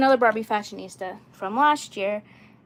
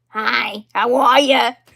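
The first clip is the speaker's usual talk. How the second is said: put-on silly girlish doll voice, very slow and drawn out; 7 dB louder than usual. Showing the voice she always makes for her doll Hillary, funny Hillary doll voice. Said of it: "the funny voice for her".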